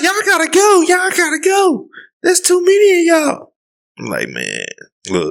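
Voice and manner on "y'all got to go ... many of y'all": very high, piping coach voice. Retelling what a woman said when many people arrived, in a high-pitched voice. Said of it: "That high pitch ass voice".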